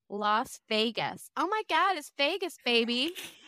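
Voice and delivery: fake American accent, stretched out slowly. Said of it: "Okay, that was Vegas".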